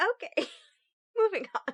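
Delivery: talking through laughter. Trying to move on after a fit of giggles, laughing while talking. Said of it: "you need a moment?".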